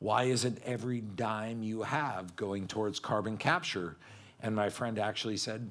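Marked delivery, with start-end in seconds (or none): none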